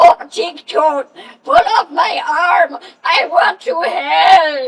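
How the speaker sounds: put-on loud voice blending old crone and little boy. Speaker shows off a character he can do for hours: Helpy voice. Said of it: "I can do Helpy for hours on end".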